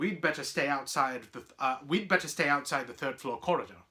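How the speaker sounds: ordinary delivery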